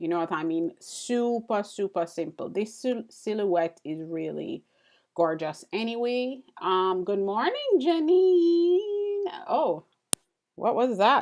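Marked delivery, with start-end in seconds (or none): 7.0-9.2 very high cracking voice, drawn out. Saying good morning to janine, voice cracking. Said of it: "my voice just cracked".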